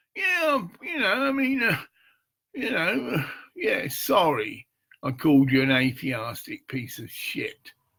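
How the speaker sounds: high, sarcastic, insincere tone.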